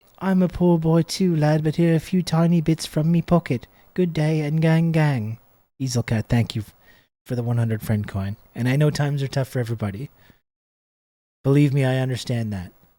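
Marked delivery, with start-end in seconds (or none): 0.2-5.4 put-on poor, malnourished Victorian urchin child voice, "gang" drawn out. Reading a viewer's message between thank-yous, in a malnourished Victorian child voice. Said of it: "my malnourished Victorian child voice".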